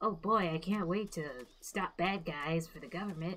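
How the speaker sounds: strange, soft, naive, innocent and eager rookie voice. Describing a young agent before his first field mission, odd put-on voice for him. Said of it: "I don't know what kind of voice that was".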